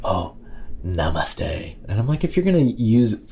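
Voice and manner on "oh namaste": sanctimonious, put-on profound, pious tone. Mimicking how namaste gets said in la yoga: mock-sanctimonious namaste. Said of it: "with this sanctimonious kind of".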